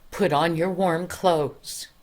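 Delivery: ordinary delivery, nothing marked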